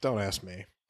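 very quiet, low, flat, resigned acted deadpan. Retelling a favorite movie line, imitating a deadpan delivery. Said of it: "her delivery is so deadpan".

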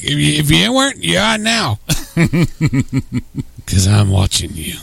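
fake, spooky, eerie voice. Acting out a caller asking if someone is up, put-on spooky voice. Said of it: "got spooky".

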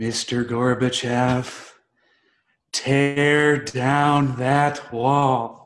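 very slow, every word dragged, "tear" stretched out. Doing an impression for a rating when asked: Ronald Reagan impression. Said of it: "my Ronald Reagan impersonation".

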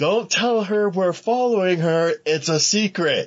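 put-on squealing, very high-pitched, shrill holler. Telling a story of following a girl with Chuck: retelling own yell. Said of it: "I yelled".

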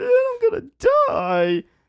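very high, very loud, drawn-out tearful crying wail. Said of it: "Mikey was just like, he was, like, crying".

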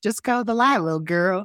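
loud, thick Southern US accent. Repeating a quoted line, spoken in a heavy southern accent. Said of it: "Like a heavy Southern accent. / Yeah, totally. That's exactly how we do it".

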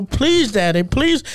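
put-on begging. Retelling begging his daddy to pay his student loans, mock pleading. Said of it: "Why are you making fun of me?".

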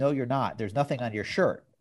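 plain

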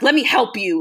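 acted, very angry put-on tone. Retelling what he said while yanking her bra away, imitating someone hella pissed. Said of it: "like hella pissed".

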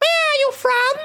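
very high, small little creature voice. Narrating a game, voicing a creature asking the players a question, high creature voice. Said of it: "The creature asks in a high voice".

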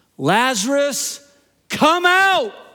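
loud, high-pitched, full-voiced cry. Telling a Bible story to an audience, retelling a loud cry. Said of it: "he cries out in a loud voice".

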